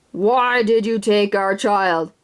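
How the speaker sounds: low, slow, drawn-out otherworldly alien voice. Narrator voices the unseen speaker questioning him and his dad, deep voice. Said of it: "A deep voice said".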